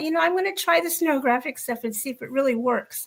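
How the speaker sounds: usual speaking voice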